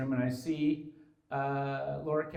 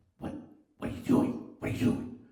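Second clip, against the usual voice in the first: repeated stage whisper. Retelling what Laura said in the ear: imitating a stage whisper. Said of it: "stage whispering".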